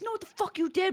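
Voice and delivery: very high, rude, going-off yelling. Retelling what a young cop said: imitating a cop yelling. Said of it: "yelling at us".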